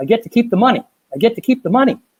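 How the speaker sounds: mock screaming, pitched very high. Retelling a phone call where she screams: imitating someone screaming. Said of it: "she starts screaming in the phone".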